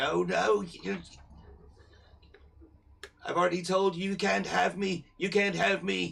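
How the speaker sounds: very high, very loud, shrill cry. Telling a story, something found in the linens protests, high-pitched voice. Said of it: "to a sort of high pitched voice".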